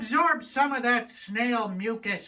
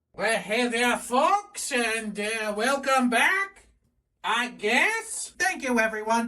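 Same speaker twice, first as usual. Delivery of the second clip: botched, bad fake French accent; 3 semitones higher than usual. Welcoming folks back to the video, in a bad french accent. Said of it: "That was supposed to be a French accent".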